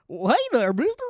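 put-on very high-pitched, loud old prospector voice. Joking that a player's name sounds like a cowboy's, doing a high-pitched old prospector voice. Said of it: "like that high-pitched voice".

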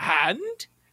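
hand said with a rising, questioning tune. Repeating how he said the word, question rise on hand. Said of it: "he said it with a question mark".

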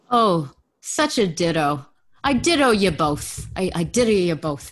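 best-attempt put-on mid-Atlantic accent. Speaking to two others, doing their best mid-Atlantic accent. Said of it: "with my best mid-Atlantic, mid-Atlantic accent".

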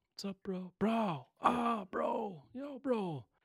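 very high, very slow, drawn-out surfer-dude drawl. Showing how people greet each other with bro: surfer inflection. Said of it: "with the inflection, like you're a surfer".

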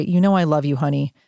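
ordinary talk

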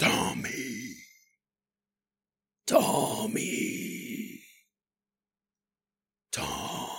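hoarse, coarse, inhuman demonic whispered voice. Telling of an entity heard calling a man's name, in a coarse, nearly demonic voice. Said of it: "some sort of coarse, nearly demonic voice say his name".

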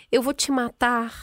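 put-on serene, calm, tranquil, perfectly even tone. Retelling a threat from Putin's adviser, the speaker mimics him: imitating a calm voice. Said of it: "voz tranquila".

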